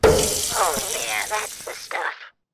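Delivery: put-on loud, creaky, croaking elderly woman's voice. Recording a beat tag as an old grandma: old grandma voice. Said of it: "Who's doing that voice?".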